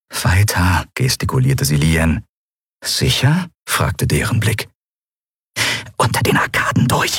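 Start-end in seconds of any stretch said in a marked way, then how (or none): 5.9-7.2 sharp hissed delivery. Reading a story aloud, a character urges her companion onward amid shouting, hissed. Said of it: "zischte Endriel".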